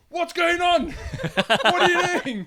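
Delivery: very high, shrill, accusing, demanding yell. Retelling a reaction to a smoke alarm going off: imitating Cara shouting. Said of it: "she started shouting at me".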